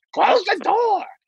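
shrill, way-up, acted-out holler, very high. Recounting a companion in the hotel room, the speaker is retelling a scream. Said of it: "He's screaming".

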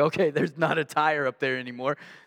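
ordinary talk

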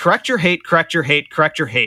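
usual speaking voice

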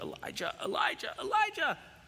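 urgent, loud screaming call. Retelling how the ladder sank while trimming hedges, retelling screaming for son. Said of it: "And I start screaming for my son".

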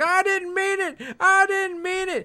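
mock, very high, shrill screaming. Speaker recounts a scene where a man is pushed to his knees, retelling him screaming. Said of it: "He's like screaming".

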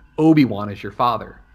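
ordinary delivery

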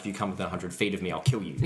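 ordinary talk

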